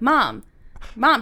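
usual speaking voice

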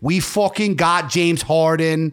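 put-on heavy Philadelphia accent in a sports announcer style. Imitating callers to Sports Talk Radio, in a thick Philly accent. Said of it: "That was my best Philly accent I could pull off".

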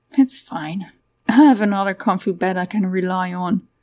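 plain

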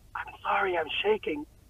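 whispered. Retelling a photo moment, the speaker quotes what she said then: retold whisper. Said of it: "and then I whisper".

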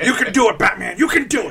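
pumped-up, high, loud pro wrestler hype voice. Imitating the figure on the roof like a pro wrestler: put-on wrestler hype voice. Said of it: "like a pro wrestler in the back".

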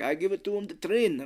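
put-on Russian accent. Retelling a story, quoting a man who is training mice; russian accent. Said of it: "I like your Russian voice".

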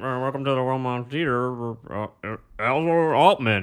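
indistinct, half-hearted, slow, mumbled, spoken over a mic. Retelling a bad intro said over the god mic: imitating someone mumbling. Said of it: "just someone mumbling".

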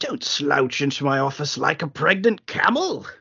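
put-on overstated, laid-on upper-class British accent. Quoting a stiff, posh boss greeting a film hero: overly posh British voice as Ross. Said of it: "overly posh kind of introduction line".

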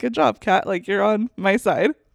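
normal talking voice

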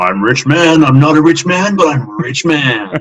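booming, very loud, very slow, drawn-out commentator voice. Imitating a well-known tournament commentator, doing a Rich Mann impression. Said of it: "see if I can do an impression".

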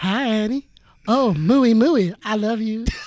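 put-on Southern accent. Trying out voices for a character with a friend, in a southern accent. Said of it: "How did you went Southern?".

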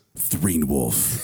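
deep, movie-trailer narration announcer voice. Asked by another speaker to say the made-up title, movie theater voice. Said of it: "Can you say Threen Wolf in like the movie theater voice?".

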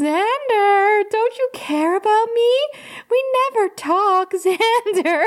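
put-on voice, very high, slow, drawn-out and teasing. Speaker voices Spike mimicking Anya to keep Xander awake: Spike's mock Anya voice. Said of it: "That was a very good Spike as Anya voice".

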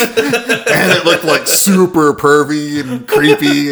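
slow, high, giggling, laughing delivery.

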